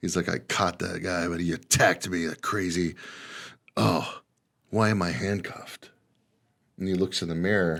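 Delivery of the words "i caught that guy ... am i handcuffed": put-on groggy, dazed, half-awake mutter. Retelling a movie scene, the speaker voices a cop waking in hospital, acting groggy. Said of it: "He's groggy".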